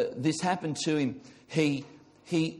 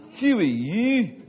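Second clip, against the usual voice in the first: put-on Scottish accent, louder, slower; 5 semitones higher, 6 dB louder than usual. Retelling a story, voicing a man questioning an approaching rider, Scottish accent. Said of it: "That's a Scottish accent".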